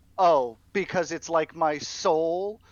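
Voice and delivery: put-on lofty, superior, haughty tone. Acting out what she plans to say after landing, in a put-on haughty tone. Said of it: "in a haughty tone be like".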